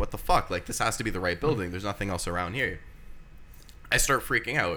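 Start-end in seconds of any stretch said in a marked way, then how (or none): none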